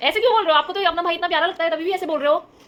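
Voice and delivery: loud, high scolding tone.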